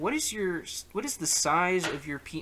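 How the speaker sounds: ordinary talk, nothing marked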